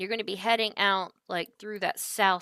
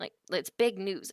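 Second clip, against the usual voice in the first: plain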